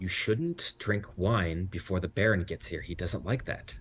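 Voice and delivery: hushed, half-whispered stage whisper. Voicing a character who warns another quietly about the Baron: half-whispering. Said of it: "Francine whispers to Lydia".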